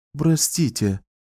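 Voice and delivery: hushed stage whisper. A librarian interrupts a wizard absorbed in reading: half-whispered. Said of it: "прошептала библиотекарша".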